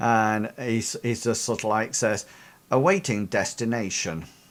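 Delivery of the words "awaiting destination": voice like a talking car. Voicing the car answering the party: robotic KITT voice. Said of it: "robotic, um, voice comes out the car, uh, almost like Kit".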